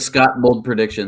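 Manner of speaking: ordinary talk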